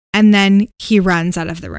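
usual speaking voice

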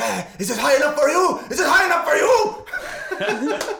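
put-on very high, loud, drawn-out, swooping, rising freak-out. Retelling an actor on set shouting at the crew: imitating an actor's freak-out. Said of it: "had, like, a freak out".

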